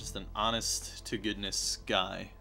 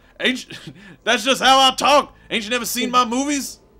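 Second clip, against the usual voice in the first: put-on tough movie-star voice; 13 semitones higher, 10 dB louder than usual. Joking about a wallet that says bad motherfucker: Samuel L. Jackson impression. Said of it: "I'm Samuel L. Jackson".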